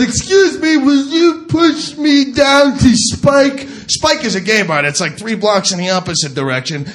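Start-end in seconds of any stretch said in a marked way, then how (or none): 0.0-3.7 slow, high, drawn-out put-on voice. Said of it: "She goes".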